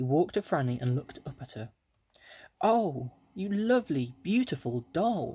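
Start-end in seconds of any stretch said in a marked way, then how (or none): 2.6-5.3 high, drawn-out cry of greatest delight. Narrator reading Franny's line as a doll walks up to her; crying out in great delight. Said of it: "cried Franny in the greatest delight".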